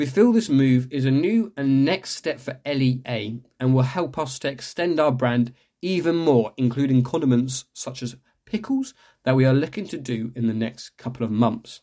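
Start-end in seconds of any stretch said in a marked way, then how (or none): none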